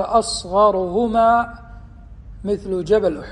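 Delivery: ordinary talk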